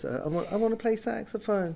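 high-pitched voice. Retelling asking Dad about playing saxophone: high voice. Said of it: "in a high voice".

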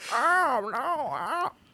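put-on high-pitched elderly woman's voice. Showing how old ladies sound: imitating an old lady. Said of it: "Old ladies sound like that. They go".

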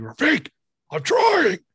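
very high yell, swooping and swinging wildly. [name], in the truck, retells yelling to Rafiq knocking outside; retelling a yell. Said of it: "As I'm sitting there yelling".

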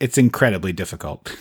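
acted flat deadpan actor voice. Retelling Brent Jennings's reply to Chris Pratt, imitating Brent Jennings deadpan. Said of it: "Brent Jennings just totally deadpan".

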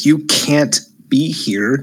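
slow, hissed words. Narrating a game, voicing a guard who hisses at the player's character. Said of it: "She hisses".

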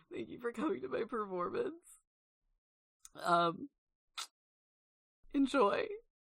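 weepy, tearful court-jester delivery. Voicing a jester with tears on his face thanking the audience: tearful Garion jester voice. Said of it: "he's got tears streaked down his face. He says".

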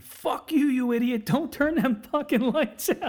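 put-on, high-pitched screaming outburst. Retelling how the shop owner yelled at him: imitating the shop owner screaming. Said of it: "starts fucking screaming at me".

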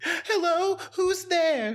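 very high, frightened horror-heroine voice. Joining a joke about a horror movie phone call: mock-scared horror heroine voice. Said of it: "like a heroine in a horror movie being stalked".

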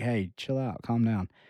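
normal talking voice

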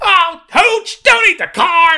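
mock, very high, stretched-out, drawn-out hollering. Retelling a Woody animation test done to a Tom Hanks line: imitating Tom Hanks yelling. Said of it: "I rarely heard him yell".

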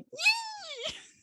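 very high, pumped, excited cheer. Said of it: "I can tell she's so excited".

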